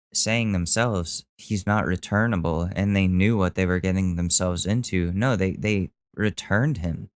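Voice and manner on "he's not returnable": ordinary talk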